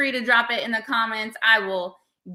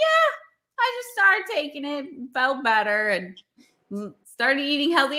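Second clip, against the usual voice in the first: breezy, sing-song, offhand, no-big-deal nonchalant tone; 3 semitones higher than usual. Retelling what a dad said at Christmas, imitating a nonchalant tone. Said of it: "he said it so nonchalantly".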